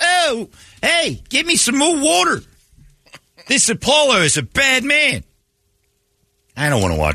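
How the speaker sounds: put-on very high, swooping Brooklyn accent, boxer-type voice. Talking about the Rocky movies and doing Rocky's lines, Rocky Brooklyn accent. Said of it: "he had a Brooklyn accent".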